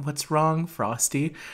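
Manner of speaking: acted-out worried, caring, very concerned tone. Recalling the scene where Karen asks Frosty what's wrong, imitating Karen, mock-concerned. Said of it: "she does a very concerning".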